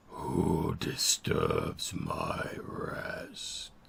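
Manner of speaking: ancient, deep, rock-grinding voice, very slow. An unseen voice fills the clearing, source unknown: old, slow rock-grinding voice. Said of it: "an old, slow voice that sounds like the grinding of rocks".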